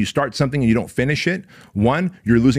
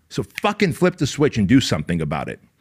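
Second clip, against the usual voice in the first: ordinary talk, nothing marked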